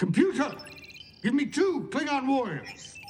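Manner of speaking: shrill, very high, loud barked yell. Running a holodeck program, the speaker orders the computer, yelling a command. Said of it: "You don't have to yell so".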